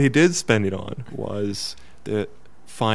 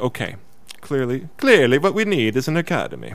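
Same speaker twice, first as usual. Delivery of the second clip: put-on Italian-accented storyteller's voice; 4 semitones higher than usual. Retelling what a man said, doing an Italian accent. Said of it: "This is my best Italian accent".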